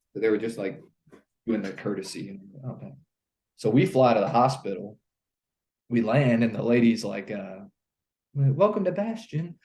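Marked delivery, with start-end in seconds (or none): 8.4-9.5 slight, light, high put-on British accent. Retelling a woman greeting them as their helicopter lands at the hospital, light british accent. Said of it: "with her little British accent".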